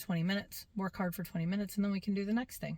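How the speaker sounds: ordinary talk, nothing marked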